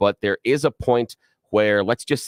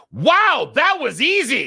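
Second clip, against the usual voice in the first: play-acted, very high, swooping, loudest-voice outburst; 3 dB louder than usual. A parent retelling what their son said stepping out in a quiet church, imitating son's loudest voice. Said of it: "And in his loudest voice".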